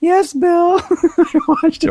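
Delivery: little falsetto, very high, slow and very drawn out. Imagining Freddie Clark answering someone in his little falsetto voice. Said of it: "sitting there with his little falsetto?".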